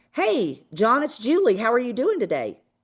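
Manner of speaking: voice with an audible smile. Showing a phone call, speaker greets John with a smiling voice. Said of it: "When I'm like, ... And you weirdly make yourself smile".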